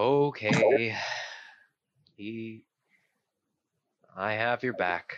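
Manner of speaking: utterly deadpan, flat and expressionless. Role-playing a character answering praise of his passion for music, completely deadpan. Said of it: "That is completely deadpan".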